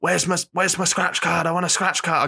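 attempted Scottish accent, mock angry. Describing a viral video character demanding a scratch card: imitating an angry Scotsman. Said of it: "this character as the angry Scotsman".

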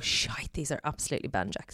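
fast, hushed muttering under the breath.

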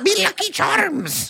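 exotic-sounding put-on voice. Asked what the character sounds like, a player tries a little exotic voice. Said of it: "There you go".

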